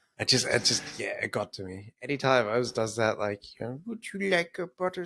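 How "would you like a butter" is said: put-on cutesy babyish talk, high little baby voice. Mocking a film character's grating voice: imitating a little baby voice. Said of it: "That little baby voice that she was doing".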